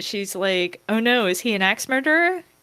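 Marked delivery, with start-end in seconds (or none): 0.9-2.4 bright, very cheerful, high-pitched chirp. Ending a vignette, voicing the character Poppy in a scene: Poppy's very cheerful voice. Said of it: "in a very cheerful voice".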